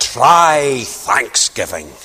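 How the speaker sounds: put-on slow, broad Scottish accent. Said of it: "in his big Scottish accent".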